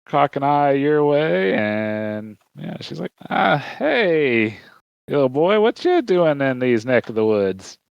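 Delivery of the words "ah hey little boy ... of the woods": put-on elderly old woman voice. Storyteller voicing an older woman in a rocking chair as a boy walks up, old woman voice. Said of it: "you see an older woman".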